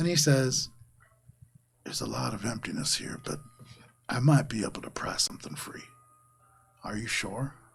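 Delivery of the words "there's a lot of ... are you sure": hushed, breathy mutter under the breath. Narrating a scene, voicing a character muttering under his breath. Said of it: "he sort of mutters under his breath".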